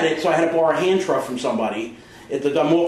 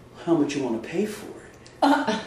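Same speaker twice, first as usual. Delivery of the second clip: smarmiest, weird, creepy, hushed voice; 5 dB quieter than usual. Retelling a haggle, the speaker voices the seller, imitating a smarmy, weird voice. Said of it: "in the smarmiest, weird voice goes".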